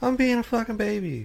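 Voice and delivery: very high, sulking, complaining radio voice. Paraphrasing a driver's team radio message: Lewis Hamilton impression. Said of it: "That's a pretty good Lewis impression".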